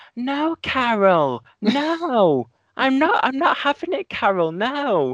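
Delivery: very high, very slow, drawn-out put-on whine. Quoting a voice she did that made the speaker laugh: whiny put-on voice. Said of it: "that whiny voice, like".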